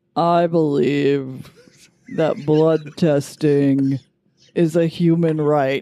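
put-on very deep voice. Doing an impression of the documentary's inventor and her faked, very deep voice.

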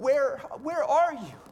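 heartbroken voice calling out. Voicing a father walking into the garden, asking: heartbroken father calling out. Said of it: "Hear the heartbreak of a father".

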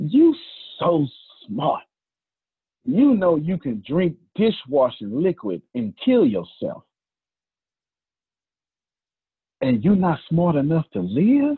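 mock dead-calm, icy, very cold delivery. Speaker retells a woman's words after she caught him with dishwashing liquid: mock-calm cold delivery. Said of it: "in the calmest tempest voice".

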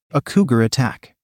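ordinary talk

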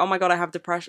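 play-acted crying voice, sobbing through the words. Mocking a careless remark by acting it out: mock crying. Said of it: "me crying and being like".

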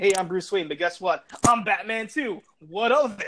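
usual speaking voice

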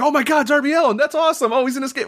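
thrilled, excited shrieking, very high. Retelling her reaction while watching wrestling, imitating her screaming excitedly. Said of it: "she's screaming".

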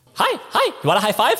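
squeaky, very high little pug voice. Voicing the pug as a cat's paw comes closer: voicing the pug. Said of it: "he looks at you as the paw's getting closer, goes".

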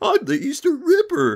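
very high-pitched, loud, cracking voice. Praising a game's voice acting, imitating Tom's cracking voice. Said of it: "voice cracking".

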